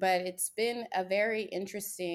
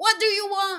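very high, loud, hard desperate yell; 10 dB louder than usual. Comparing oneself to the lead in The Notebook: Ryan Gosling impression. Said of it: "I feel like that dude in The Notebook who was just like".

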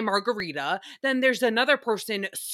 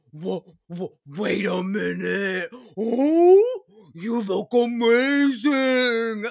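mock deep monster voice; 4 dB louder than usual. Out at dinner, she greets a friend who walks in, deep Princess Fiona ogre voice. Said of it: "our voice drops some octaves".

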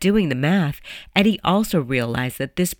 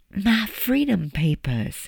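whispered, much slower and higher; 4 semitones higher than usual. Reading a woman's reply to a man in a story, whispered. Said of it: "she whispered".

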